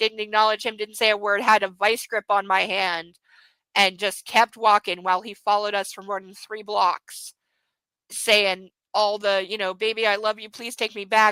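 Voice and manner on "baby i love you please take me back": play-acted desperate pleading, going on and on. Recounting a man following her mother down the street: imitating desperate begging. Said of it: "like literally begging".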